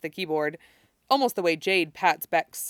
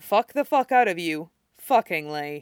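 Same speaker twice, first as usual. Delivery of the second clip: flat, dry, expressionless, straight-faced delivery. Narrator reads a character's retort to a sarcastic remark, deadpan. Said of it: "And deadpan".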